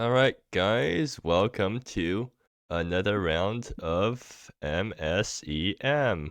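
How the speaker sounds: talking slowly. Host welcoming the guys to another round, talking slowly. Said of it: "I don't know why I'm talking so slowly".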